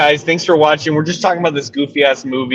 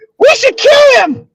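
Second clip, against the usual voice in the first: put-on very high, loud small child's voice; 6 dB louder than usual. Retelling a movie scene, the speaker quotes the kid's only line in a little kid voice. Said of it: "he says it in this little kid voice".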